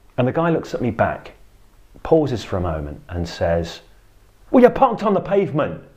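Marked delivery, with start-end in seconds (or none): 4.5-5.8 mock very high, rushed, irritated and angry delivery. Quoting a man's reply after being looked in the eye, retelling an angry tone. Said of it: "in an angry tone".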